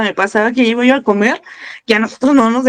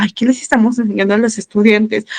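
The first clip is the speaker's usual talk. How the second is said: plain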